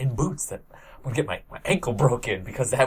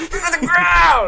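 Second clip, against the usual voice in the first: much higher, louder imitated movie scream; 9 dB louder than usual. Recalling a movie's hallmark moment, the speaker screams the line like Kevin Bacon. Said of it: "Kevin Bacon just screaming".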